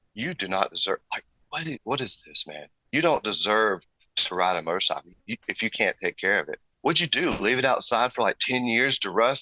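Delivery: ordinary talk, nothing marked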